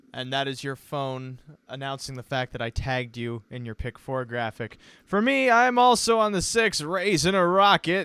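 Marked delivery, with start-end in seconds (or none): 5.1-8.1 put-on old-time 1950s radio announcer delivery. Giving picks on a show: 1950s radio host voice. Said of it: "Why am I speaking like a 50s radio host?".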